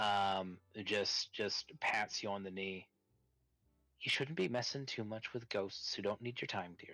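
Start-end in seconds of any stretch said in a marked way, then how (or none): 4.0-6.9 completely calm, even, unflappable voice, not a crack. Voicing the player's mother patting their knee: completely calm, not a crack. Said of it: "Not a crack in her voice, just completely calmly".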